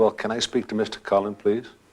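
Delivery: ordinary talk, nothing marked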